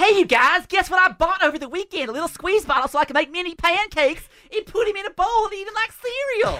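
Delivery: put-on voice, pitched very high. Doing an impression of Cameron for the others: imitating Cameron. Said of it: "his impression of fake news, Doc Cameron".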